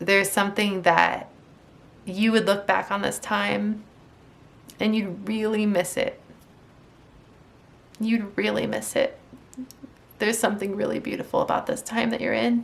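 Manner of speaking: choked up, emotion audibly breaking through. Giving advice to listeners, getting emotional. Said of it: "I'm getting emotional again".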